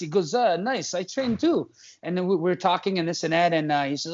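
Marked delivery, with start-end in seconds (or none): 0.3-1.7 put-on heavy, thick European accent, slow and high. Retelling meeting a tattooed man who also trains; imitating a man's thick accent. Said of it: "he spoke with a really thick accent".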